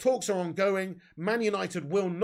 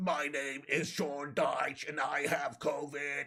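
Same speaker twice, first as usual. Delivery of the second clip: imitated ill-sounding voice; 4 semitones lower, 5 dB quieter than usual. Imagining how a football manager would sound with covid: Sean Dyche with covid voice. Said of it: "proper Dyche mode".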